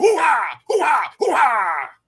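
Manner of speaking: "hoo-ha" hollered repeatedly, loud, high, swooping. Quoting Al Pacino's catchphrase from the movie: Al Pacino yelling impression. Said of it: "he's yelling, he's yelling".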